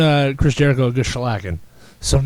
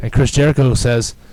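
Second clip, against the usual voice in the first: ordinary delivery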